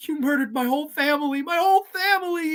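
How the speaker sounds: put-on hard crying. Retelling a movie scene, quoting the friend's line: imitating someone crying hard. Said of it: "And she's crying her eyes out".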